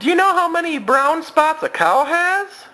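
very high, loud hand-puppet voice. During a family puppet show, a puppet quizzes a little girl: puppet voice. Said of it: "My name is [name]".

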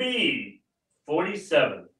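put-on announcer voice with swooping pitch. Showing the one little thing they'd like to do: announcer voice. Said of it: "Use my announcer voice".

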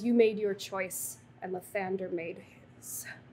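deep, resonant, reverberating voice ringing like a bell. Voicing a champion turning to Fauna: deep reverberating voice. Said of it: "in this voice that is not Moira, it is deep and it reverberates".

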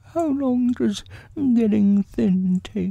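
worried and anxious, very high-pitched. The stuck bear asks the others a question, anxious. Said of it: "asked Pooh anxiously".

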